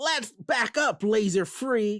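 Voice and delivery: dim-sounding drawn-out voice. Retelling a scene where the character pushes a foe: dumb Cliffjumper voice. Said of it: "I give him a dumb voice".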